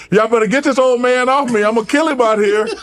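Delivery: high scream. Retelling a fight, imitating a fighter screaming at the crowd: imitating Larry screaming. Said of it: "and he's screaming it too".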